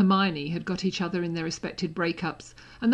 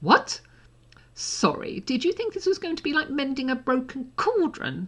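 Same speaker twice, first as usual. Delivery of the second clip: high-pitched, contemptuous, scornful, mocking sneer; 8 semitones higher than usual. Narrating a story, voicing Malfoy answering Harry, sneering. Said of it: "Malfoy sneered".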